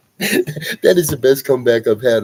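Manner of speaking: loud, speaking through open laughter. Reacting to the best comeback you've heard, laughing while talking. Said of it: "I'm sorry I'm laughing".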